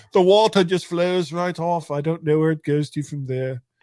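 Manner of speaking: put-on British accent. Joking about a flat earth with the other speaker: put-on British accent. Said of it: "What sort of accent is that?".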